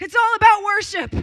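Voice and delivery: sudden shrill, high-pitched shout at full volume. Retelling what he shouted on waking one morning, retelling a yell. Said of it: "why are you yelling?".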